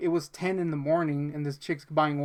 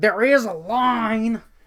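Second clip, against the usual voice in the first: mock obnoxious voice, high, loud, drawn out; 6 semitones higher, 5 dB louder than usual. Retelling what a woman said in a nasty douche voice, imitating a nasty voice. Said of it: "this nasty ass voice".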